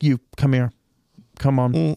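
very calm, unruffled, firm authoritative delivery. Retelling how a woman in the crowd insulted a cop, imitating the very calm cop. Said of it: "the cop just very calmly is like".

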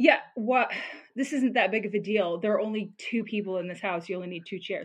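condescending, dismissive, brushing-off tone.

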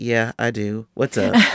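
acted-out dry, level, flat deadpan. Retelling phoning a friend and how he answers: imitating his deadpan reply. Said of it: "he gets that little deadpan thing going on".

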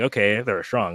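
normal talking voice

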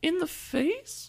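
very high-pitched voice. Retelling her own reply in a story, very high-pitched voice. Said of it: "why did you get so high pitched?".

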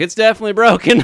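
high, loud, blurted-out delivery.

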